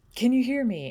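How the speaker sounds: really strong call, shrill and booming, high. Describing someone calling out, the first calls really strong. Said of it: "really strong".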